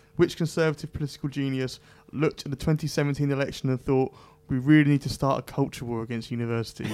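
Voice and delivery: ordinary talk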